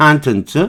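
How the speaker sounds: 컨텐츠 with stressed first syllable. Explaining how the noun is pronounced: stress on first syllable of contents. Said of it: "명사면 앞에 발음이 강세가 나 컨텐츠 이렇게 발음합니다".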